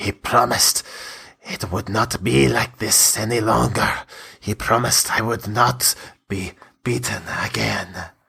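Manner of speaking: mumbled under the breath, half to herself. Narrator voicing a dying woman who lowers her head and speaks: muttering. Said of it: "she mutters again".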